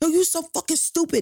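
mock shrill, very high drunken screaming. Retelling a partner's angry outburst over lost parade seats: imitating a drunk man yelling. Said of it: "he's yelling and screaming at me".

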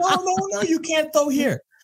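very high, shrill, yelled broken English. Retelling a woman stopping him from using the trash can, retelling a yell in broken English. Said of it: "yelling at me in broken English".

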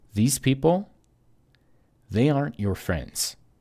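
acted, solemn, dead-earnest, very serious grave tone. Speaker quotes what she told him, looking him in the eye, retelling her very serious tone. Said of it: "in a very serious tone".

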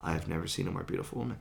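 very quiet muttered murmur under the breath. Retelling first seeing her at the hallway's end: imitating muttering under the breath. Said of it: "I audibly, under my breath, say".

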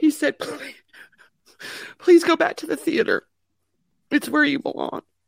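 high-pitched, tearful crying voice.

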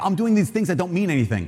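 plain

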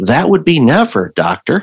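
sheepish, swooping delivery. Retelling answering the doctor's question about your last colonoscopy, retelling a sheepish reply. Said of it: "I kind of sheepishly went".

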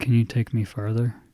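very quiet, hushed, barely audible small voice. Retelling a ride, quoting a girl who wouldn't get out of the car, said quietly. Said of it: "she says it like that quietly".

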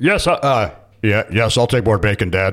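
voice dropped right down, deep. Retelling how the son sounded asking for more bacon: imitating son's deep voice. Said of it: "Oliver's voice yesterday was".

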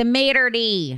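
heavy, laid-on Michigan accent on "maitre d". Introducing this week's topic, the host says the word in a thick Michigan accent. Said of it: "as we say with a thick Michigan accent".

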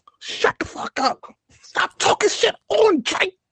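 high-pitched stupid voice. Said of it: "stupid voice".

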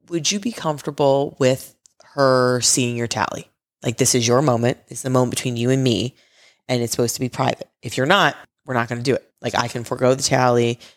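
ordinary talk, nothing marked

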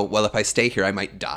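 ordinary talk

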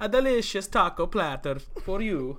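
stupid put-on Italian accent. Joking about family food in a stupid put-on Italian accent. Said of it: "so funny to do stupid Italian accents".

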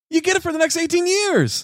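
very high, slightly excited upbeat pitch. Pitching how to say a line differently: excited, upbeat delivery. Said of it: "What if we said it like this? ... A little excitement in it".

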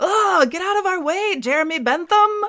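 very high-pitched, shrill, acted-out yell. Retelling how someone yelled at a slow walker blocking their car, retelling a yell. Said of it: "James yells".

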